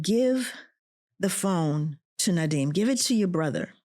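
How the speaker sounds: normal talking voice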